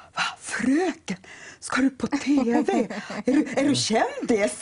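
put-on slow, amazed, excited child voice.

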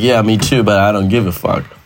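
normal talking voice

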